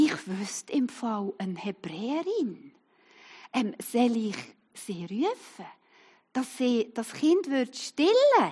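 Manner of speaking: hushed, whispered, feigned innocent tone.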